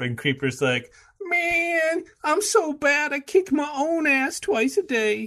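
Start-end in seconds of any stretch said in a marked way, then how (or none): 1.2-5.3 very high, slow, dragged-out drawl. Retelling a film scene, voicing one character's boast, Shaggy-like voice. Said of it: "you just sound like Shaggy from Scooby-Doo".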